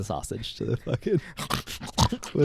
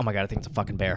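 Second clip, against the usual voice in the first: mock panicked freak-out, quieter; 4 semitones lower, 6 dB quieter than usual. Retelling a woman hearing her dog bark in the dark, imitating someone freaking out. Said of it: "she was like freaking out".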